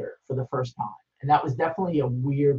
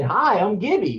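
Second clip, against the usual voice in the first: ridiculous, drawn-out Texas drawl, loud and high; 6 semitones higher, 5 dB louder than usual. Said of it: "with this ridiculous, you know, Texas drawl of his".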